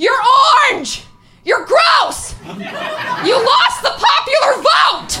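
very high, slow, drawn-out yell climbing upward. Speaker retells a woman in a sea of people who starts yelling; retelling a yell. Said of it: "and just starts yelling".

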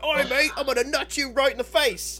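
mock screaming in a British accent. Picturing two guys in a british pub, imitating british pub screaming. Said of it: "screaming at each other".

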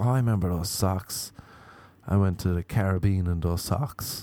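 ordinary talk

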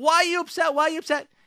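incredulous talk through laughter. Retelling how the other driver replied to the yelling: imitating someone laughing while talking. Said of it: "he's just, like, laughing".

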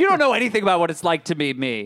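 put-on powerful, sultry voice. Imagining a movie fish talking back to Cody: imitating a powerful, sultry voice. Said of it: "somebody with a powerful and yet sultry voice".

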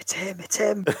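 hushed, accusing half-whisper. Joking about blaming the guy next to you: pretend half-whisper. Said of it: "kinda just whisper".

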